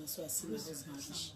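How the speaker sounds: usual speaking voice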